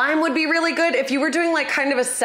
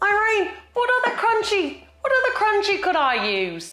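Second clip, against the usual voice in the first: put-on Australian accent, pitched up; 7 semitones higher than usual. Speaker calls out to Irene in an Australian accent. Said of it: "This is my Australian".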